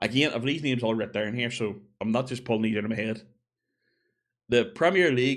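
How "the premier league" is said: loud, fake French accent. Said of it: "with a French accent".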